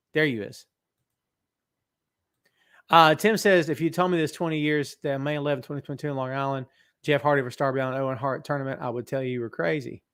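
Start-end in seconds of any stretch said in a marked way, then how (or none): none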